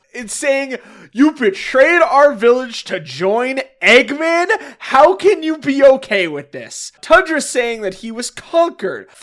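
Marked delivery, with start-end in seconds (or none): 1.1-7.0 furious, betrayed, accusing outburst. Retelling a comic scene where Rotor confronts his father: imitating an angry character. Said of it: "Rotor is understandably fucking pissed".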